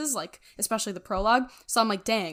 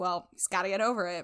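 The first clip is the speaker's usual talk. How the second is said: put-on stern voice; 3 dB quieter than usual. Retelling a book scene about a child afraid of the wolf: imitating Ned, very stern. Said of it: "Ned very sternly says".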